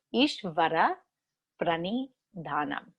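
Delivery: slow, deliberate, carefully spelled-out Sanskrit term. Pronouncing a long Sanskrit term for listeners, said slowly. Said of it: "I'll say it slowly".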